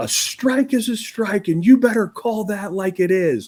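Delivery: play-acted, shrill, very high screaming rant. Retelling going to the umpire after the lost game: retelling own screaming. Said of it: "I'm screaming at him".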